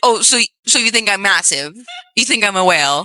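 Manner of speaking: ordinary talk, nothing marked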